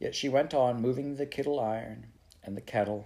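ordinary delivery

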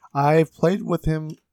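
voice breaking and cracking mid-phrase. Talking about who they played Warzone with, voice cracking. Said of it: "My voice cracked".

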